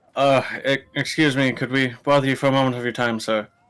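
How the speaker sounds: put-on awkward, nervous, hesitant voice. Voicing a character who interrupts a busy captain: awkward, hesitant in-character request.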